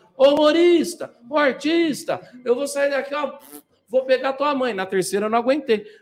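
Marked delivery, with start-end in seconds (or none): 0.2-4.7 high, drawn-out, acted drunken yell. Retelling how a drunk heckler at a stand-up gig shouted: imitating a drunk man yelling. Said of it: "o cara".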